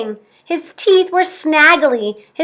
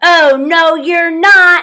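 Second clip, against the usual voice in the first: roaring troll voice, higher pitch; 3 semitones higher than usual. Narrator reading a fairy tale voices the troll on the bridge, roaring. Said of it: "roared the Troll".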